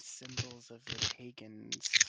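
whispering in a character voice. Voicing a character who leans over to someone: whispering in character. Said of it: "leans over and whispers into her ear".

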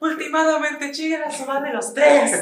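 put-on angry woman's voice, very high, shrill, loud. Retelling what a lady at the wrestling shouted: imitating an angry lady. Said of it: "y luego enojada".

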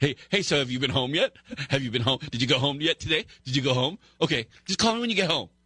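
mock giggling, teasing, badgering chatter. Imitating Handel phoning repeatedly to ask if they got home: imitating Handel giggling. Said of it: "giggling, going".

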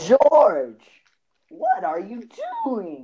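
high, loud, swooping sitcom comedian voice. Told he doesn't know how Jerry Seinfeld talks, the speaker demonstrates: Jerry Seinfeld impression. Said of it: "It's like this".

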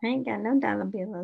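normal talking voice

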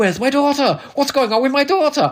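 terrible put-on Welsh accent, very high-pitched. Recalling how a character says his line: bad Welsh accent. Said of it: "my Welsh accent's terrible".

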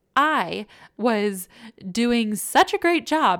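loud, heavy, openly ironic, mocking sarcasm. Admitting how hard the marriage felt in the mind: sarcastic. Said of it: "I'm being completely sarcastic here".

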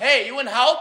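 very high-pitched shout. Retelling what a fan behind the bench yelled: imitating Alex yelling. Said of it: "Alex just yells".

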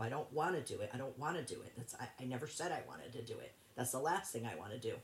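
ordinary talk, nothing marked

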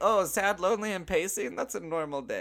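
very high, offhand, put-on Russian accent. Speaker mimicking the Malaysian government's reaction, in a Russian accent. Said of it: "I don't know why I just did like a Russian accent".

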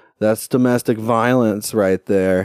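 ordinary delivery

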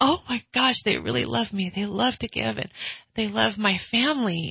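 mock overwhelmed voice, crying happy tears. Retelling what you said each day after receiving gifts: imitating own happy crying. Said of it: "every day I cried like that".

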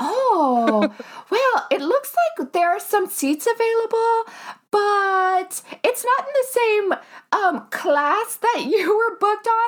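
Midwest accent impression. Retelling talking to an airport agent: imitating a midwestern gate agent. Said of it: "they're from the Midwest, obviously".

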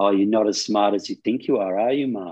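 put-on nasty, sarcastic, demeaning sneering tone. Retelling what she said to him when he couldn't read the time, mimicking her nasty sarcastic tone. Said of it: "in this really kind of nasty, sarcastic tone, demeaning tone".

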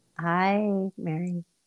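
listless, flat, tired, unenthusiastic voice. Greeting a daughter at the start of the episode: unenthusiastic greeting. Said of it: "you sound so enthusiastic right now".

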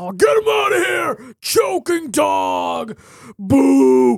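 very slow, high, drawn-out jeering boo. Speaker mimics fans turning on goalie Rask; mimicking booing fans. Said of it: "mocking fans booing Rask".

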